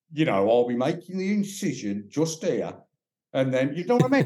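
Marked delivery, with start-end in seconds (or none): 0.5-2.8 put-on broad Birmingham accent, laid on thick. Imitating a surgeon talking to a patient, in a thick Brummie accent. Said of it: "or a really thick Brummie accent".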